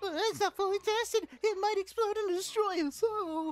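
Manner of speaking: nervous henchman voice, very high and very loud. Voicing a henchman in a game cutscene, answering his master: nervous henchman scientist voice.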